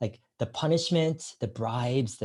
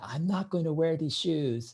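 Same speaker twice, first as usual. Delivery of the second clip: put-on play-acted, high, weepy, tearful crying child's wail; 5 semitones higher than usual. Retelling a child refusing to wear shoes: imitating a crying child. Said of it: "just crying, saying".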